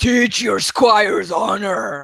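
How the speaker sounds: booming, thundering, very loud call. A player tries the line again as asked, in a booming voice. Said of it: "give me a booming voice".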